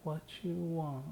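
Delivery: cutesy put-on baby voice, baby talk. Describing what they say every night when exhausted: [name] baby voice. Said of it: "But I'm saying it in like a baby voice".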